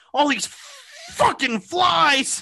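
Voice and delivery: acted very high, swooping, temper-losing angry outburst. Retelling how a man in a commercial reacted to flies: imitating someone losing his temper. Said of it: "he's just losing his shit".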